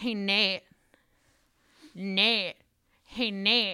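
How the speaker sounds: put-on drunk voice, calling out. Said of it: "so drunk".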